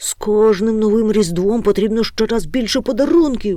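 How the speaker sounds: sudden, explosive, loud, high outburst. A character bursts out in answer to a frightened question, bursting out. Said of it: "вибухнув Гемуль".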